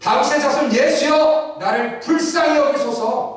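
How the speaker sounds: high, loud, desperate crying out.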